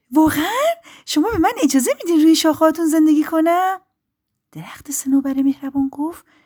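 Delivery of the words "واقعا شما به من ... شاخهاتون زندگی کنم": joyful, full of joy, pitch raised high. A narrator reads a little bird answering a kind spruce tree, happily asking. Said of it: "پرنده کوچولو با خوشحالی پرسید".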